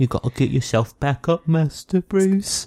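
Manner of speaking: whimsical, high-pitched delivery. Quoting a butler line in a whimsical Michael Caine voice. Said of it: "That had almost a whimsical".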